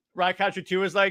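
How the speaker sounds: ordinary delivery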